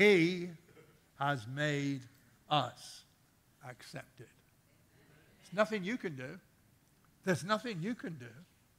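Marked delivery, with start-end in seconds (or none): 0.0-4.3 very slow, halting, word-by-word delivery. Repeating a bible verse for listeners, said again very slowly. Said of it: "Let me say that again slowly".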